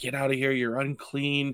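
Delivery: sudden, recoiling outcry. Retelling an episode's scene, as the shopkeep sends the man away: imitating someone crying out. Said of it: "And he cries out".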